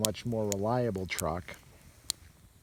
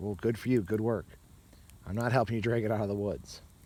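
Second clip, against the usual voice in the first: plain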